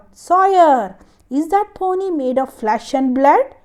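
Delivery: fierce, demanding tone. Reading a story to children, the master calls out to Sawyer, stern fierce voice. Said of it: "in a stern voice".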